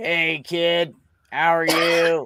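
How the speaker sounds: put-on, robotic, buzzing electrolarynx voice. Retelling how an old man with throat cancer greeted him: imitating Mister Pulowski's electrolarynx voice. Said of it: "he'd be like".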